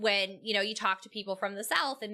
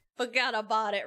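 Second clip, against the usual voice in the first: Brooklyn New York accent. Showing the New York accent that slips out: Brooklyn accent. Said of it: "I slip into a, a Brooklyn accent".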